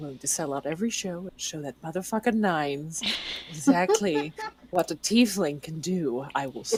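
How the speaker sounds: soft mumbling, muttered under the breath. A tiefling character getting ready for shows, muttering under breath. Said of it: "I'm just like mumbling under my breath".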